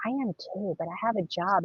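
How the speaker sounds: ashamed, embarrassed, sheepish tone. Retelling what a woman living in her car said: imitating someone ashamed. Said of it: "she said it like that, so shamed".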